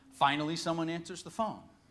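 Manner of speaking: usual speaking voice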